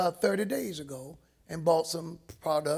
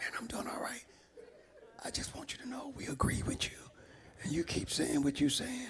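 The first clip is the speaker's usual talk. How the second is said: very quiet, breathy whisper; 7 semitones higher, 9 dB quieter than usual. Retelling a preacher's phone call to him: imitating someone whispering. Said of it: "The man was whispering on the phone".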